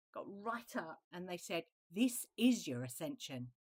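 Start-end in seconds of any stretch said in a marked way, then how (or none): 1.9-3.5 blunt, direct, pointed, acted-out delivery. Retelling what a guide said nose to nose: imitating a very direct, pointed voice. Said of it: "just very direct and very pointed".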